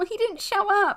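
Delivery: acted deeply upset tone. Retelling a daughter answering her parents in the car: imitating being really upset. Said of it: "really upset".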